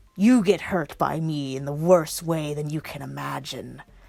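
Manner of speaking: deep, scary voice with a static quality. A narrator reads Alistair's line to the lizard demon; deep, scary, static voice. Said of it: "in his deep, scary, static voice".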